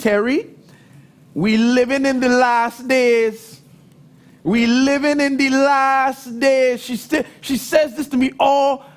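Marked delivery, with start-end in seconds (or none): 0.0-6.8 put-on Trinidadian accent, last word drawn out. Retelling what your mother always says to you, in her Trinidadian accent. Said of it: "in her Trinidadian accent".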